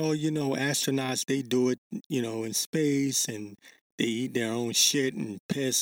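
ordinary delivery

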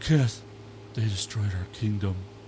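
mock saddest, most crestfallen, forlorn voice. Reminding a friend how they called about a destroyed game kingdom, retelling a very sad voice. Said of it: "with the saddest voice I've ever heard in my life".

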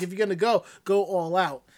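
ordinary delivery

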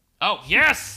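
high, loud yelling.

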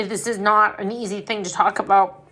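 ordinary talk, nothing marked

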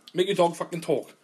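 ordinary talk

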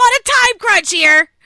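very loud, very high, in-your-face yell. Recounting a man who cut in front and got in her face: retelling a yell. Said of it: "yelled in my face".

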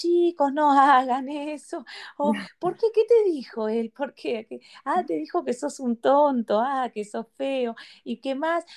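unhinged, slow, high-pitched, soothing kindergarten teacher voice. A speaker imitates how she scolds children, in a psychotic kindergarten teacher voice. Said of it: "una voz de maestra jardinera psicótica".

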